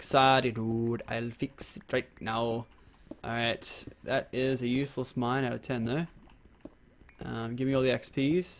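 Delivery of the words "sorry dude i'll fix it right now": put-on Russian accent. Imitating how Choco apologizes: Choco's Russian accent. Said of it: "talks in Russian".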